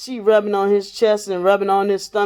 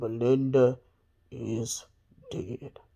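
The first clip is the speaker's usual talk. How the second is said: deepest, very low, scary voice; 8 semitones lower, 10 dB quieter than usual. Retelling how a brother on the phone tried to sound scary: imitating his deepest voice. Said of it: "in his deepest voice".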